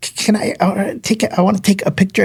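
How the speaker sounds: put-on stuttering speech. Retelling a nervous kid asking for a picture: imitating a stutter. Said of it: "he's, like, stuttering".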